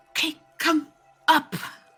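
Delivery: high-pitched stage whisper. Voicing a character inviting the others up: half-whispering in character. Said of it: "says in a whisper".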